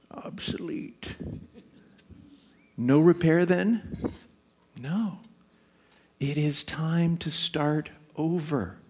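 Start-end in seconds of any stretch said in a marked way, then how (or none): 0.1-5.2 slow, cranky, curmudgeonly mutter under the breath. A speaker tells listeners they might hear a voice, put-on curmudgeonly muttering voice. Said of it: "a curmudgeonly voice muttering".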